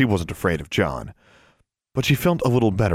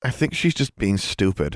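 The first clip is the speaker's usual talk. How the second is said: ordinary delivery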